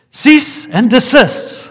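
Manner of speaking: commanding booming yell, very high and loud. Telling a story, recounting what a man yelled out: retelling a booming yell. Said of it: "he yelled out in his booming voice".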